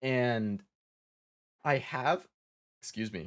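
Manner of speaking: voice cracks, pitch breaking on "have" in "I have". Explaining game accounts and family sharing, with a voice crack. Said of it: "nice voice crack".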